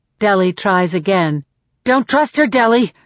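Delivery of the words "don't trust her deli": frenzied, frantic, urgent tone. Peeta speaking to deli, in a frantic voice. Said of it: "says Peeta in a frantic voice".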